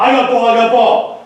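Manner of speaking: put-on loud callout yell, each word stretched. Showing how the top backer calls the ball: yelling a callout. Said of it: "So he's yelling".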